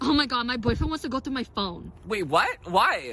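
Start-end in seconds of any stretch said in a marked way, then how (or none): 0.0-1.9 high, fake, put-on girly voice. Prompted to speak in a girl voice: put-on girl voice. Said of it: "say it in your girl voice".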